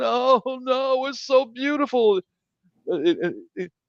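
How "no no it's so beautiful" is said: very high, slow, weepy, tearful crying voice. Retelling a film scene where a woman wakes up: imitating crying. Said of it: "She's crying".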